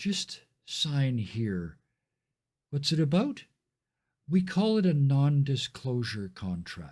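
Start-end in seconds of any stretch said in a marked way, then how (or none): 0.0-1.8 very gentle, soft-spoken voice. Recounting the procedure, the speaker performs the voice that speaks next: very gentle voice. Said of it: "this very gentle voice says".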